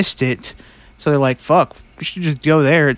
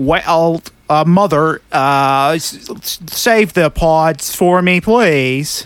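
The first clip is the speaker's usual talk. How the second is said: very drawn-out, very slow, artificial, synthetic robotic voice. Describing the accent a man chose, the speaker quotes him: synthetic robotic accent. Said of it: "It felt like uh, synthetic".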